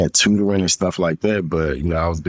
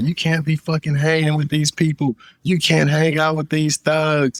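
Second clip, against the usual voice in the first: mock very high, furious, angry scolding; 10 semitones higher than usual. Retelling being scolded from a truck: imitating someone cursing angrily. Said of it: "he's cursing me out".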